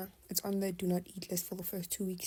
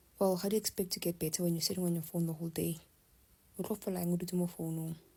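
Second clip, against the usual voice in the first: plain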